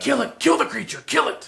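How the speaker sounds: loud, harsh, shrill, raspy high voice. Voicing a sword that starts cursing at a creature: cursing sword voice. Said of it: "You hear your sword, sword start, like, cursing".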